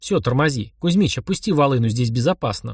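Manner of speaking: ordinary delivery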